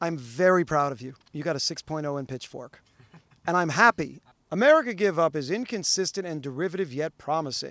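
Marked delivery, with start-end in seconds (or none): none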